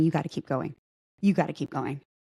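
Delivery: fast, pressing, urgent half-whisper, repeated. Retelling a panic, speaker quotes a woman urging her on; retelling a half-whisper. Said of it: "she just keeps whispering".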